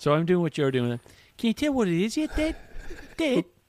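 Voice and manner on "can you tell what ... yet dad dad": Irish accent, not high-pitched. Speaking to Dad, doing an Irish accent. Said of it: "I'm having an Irish accent".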